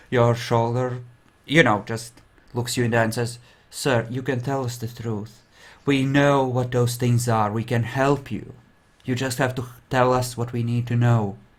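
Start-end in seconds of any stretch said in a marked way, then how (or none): 3.7-11.3 kindly, sympathetic, coaxing tone. Voicing a lieutenant leaning in and urging a prisoner to talk: sympathetic lieutenant. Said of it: "puts a hand on your shoulder with a sympathetic look".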